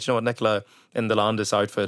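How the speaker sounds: plain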